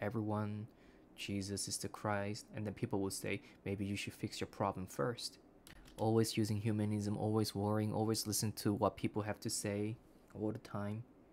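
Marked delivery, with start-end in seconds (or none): 0.0-2.4 level, droning, flat monotone delivery. Speaker imitates a pastor preaching from the pulpit, monotone. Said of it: "with a monotone and say".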